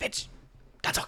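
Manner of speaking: hushed whisper. Warning a companion in character about a possible threat: whispering. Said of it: "whisper to Finch".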